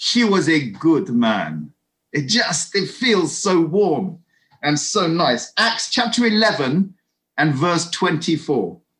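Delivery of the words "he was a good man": Cypriot accent. Speaker reading out a favourite Bible verse, Cypriot accent. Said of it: "you have to say that in a Cyprus accent".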